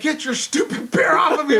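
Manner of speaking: frantic, high, desperate yelling. Retelling being smashed by a bear in a cage: retelling a yell. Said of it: "I'm yelling".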